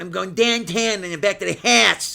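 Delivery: put-on Boston accent. Imitating how people talk, mocking a Boston accent. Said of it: "the worst of Boston".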